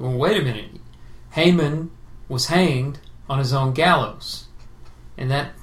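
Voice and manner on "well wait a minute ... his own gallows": plain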